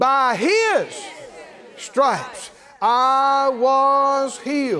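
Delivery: every word emphasized.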